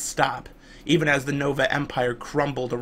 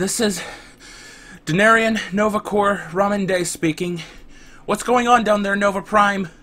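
breathless, winded, gasping, raised and higher; 7 semitones higher, 5 dB louder than usual. A corps officer calls Nova Prime over his wrist communicator, gasping.

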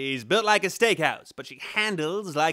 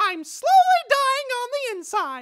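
squeaking out high and loud; 6 dB louder than usual. In a cartoon impressions video, doing a Mickey Mouse voice. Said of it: "without Mickey Mouse!".

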